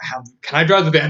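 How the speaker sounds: ordinary delivery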